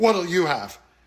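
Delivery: put-on scornful, dismissive, contemptuous sneer. Retelling how a server spoke to a customer, mock sneering.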